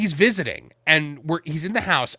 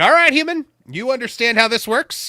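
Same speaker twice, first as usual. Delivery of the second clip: put-on petulant duck voice, higher pitch; 7 semitones higher, 4 dB louder than usual. Retelling how a fat duck looked up and spoke: voicing a petulant duck. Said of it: "it's just like".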